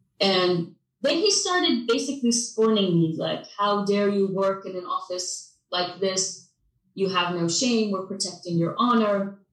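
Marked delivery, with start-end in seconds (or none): none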